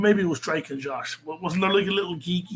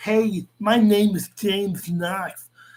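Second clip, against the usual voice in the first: mock lisp, spoken slower; 3 semitones higher, 5 dB louder than usual. Mocking a man who criticized Colin's speech: mocking lisp as James Knox. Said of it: "He talks with a lisp".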